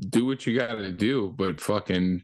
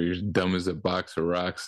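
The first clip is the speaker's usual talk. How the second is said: ordinary talk, nothing marked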